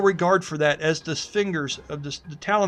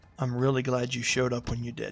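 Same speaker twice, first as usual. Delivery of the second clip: earnest, sincere half-whisper, kept down low; 6 semitones lower, 6 dB quieter than usual. Voicing a character quietly thanking another: sincere low half-whisper. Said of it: "sincerely whispers down low".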